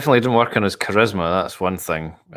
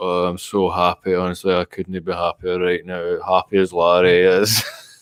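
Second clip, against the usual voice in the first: put-on mumbling Scottish accent, slower. Show the others how he just mumbles when he talks, in a put-on mumbling Scottish voice. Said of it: "he just mumbles".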